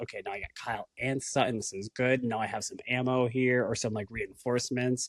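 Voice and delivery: ordinary talk, nothing marked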